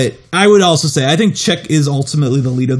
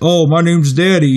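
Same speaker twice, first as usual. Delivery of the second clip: put-on drunk delivery. Retelling how a character delivers lines at the cops: imitating a drunk character. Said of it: "he would still deliver his lines like he was very drunk".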